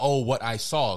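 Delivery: ordinary delivery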